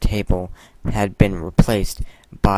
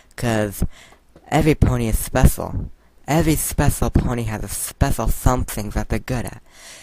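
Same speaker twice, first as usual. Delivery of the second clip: put-on lisping pony voice; 2 semitones higher than usual. Showing the audience the voice planned for Twist: Twist voice. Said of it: "if I read Twist with this voice".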